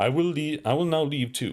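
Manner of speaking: grand, theatrical, declaiming delivery. Narrator voices a woman as the group parts ways, theatrical announcement. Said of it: "Caristiona announces theatrically".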